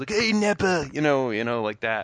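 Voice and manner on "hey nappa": very high-pitched, raspy cartoon voice. Imitating how the English dub voices a character: raspy English-dub Vegeta voice. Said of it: "He's kinda, like, raspy".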